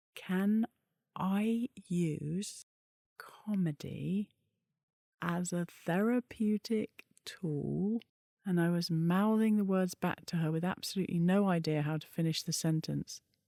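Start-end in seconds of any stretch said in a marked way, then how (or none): 0.2-8.0 very slow, deliberate, halting, spelled out word by word. Retelling how Lisa put her question to the speaker, very slow and deliberate. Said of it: "she started to speak very slowly and very deliberately".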